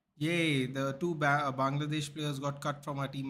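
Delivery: normal talking voice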